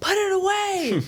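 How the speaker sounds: high-pitched, slow, loud yell.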